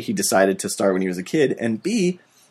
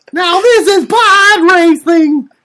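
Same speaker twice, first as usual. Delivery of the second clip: put-on very high, slow child voice. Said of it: "That's my Anakin Skywalker voice".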